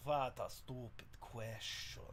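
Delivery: whispered, hushed, breathy put-on Russian accent. Trying out voices for a character, the speaker tests a Russian accent.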